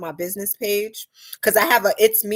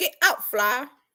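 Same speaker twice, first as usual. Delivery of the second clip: high, babyish put-on baby voice; 5 semitones higher than usual. Speaker acts out trolling comments, baby voice. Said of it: "And my baby voice".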